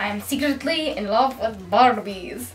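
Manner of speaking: bad put-on Russian-like accent. Reading a written sentence aloud in a put-on accent, bad accent, sounds russian. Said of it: "That sounded Russian".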